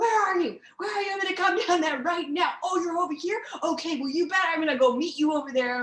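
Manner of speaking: fast, high-pitched, enraged dad voice. Retelling how a father reacted to prank callers, imitating an angry dad. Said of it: "he was so pissed off".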